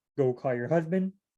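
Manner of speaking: ordinary talk, nothing marked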